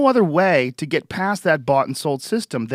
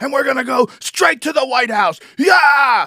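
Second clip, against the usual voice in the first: put-on, very high, loud screaming crowd cheer; 9 semitones higher, 6 dB louder than usual. Explaining crowd noise at rallies: imitating someone screaming. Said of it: "screaming like".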